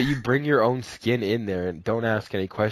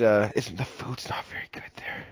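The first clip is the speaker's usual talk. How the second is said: hushed whisper, much quieter; 3 dB quieter than usual. Friends choosing where to eat, doubting a restaurant's food: whispering. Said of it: "I don't know why I had to whisper that".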